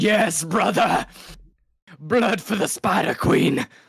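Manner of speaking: very high, slow, drawn-out yell. Voicing a character who yells from the background of the scene, yelling in character. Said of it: "I'm gonna yell in the background".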